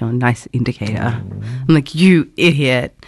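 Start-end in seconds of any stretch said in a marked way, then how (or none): 0.0-1.0 acted-out muttering mumble, under breath. Speaker describes reacting to other drivers, retelling a mumble under breath. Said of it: "I'm like literally mumbling under my breath".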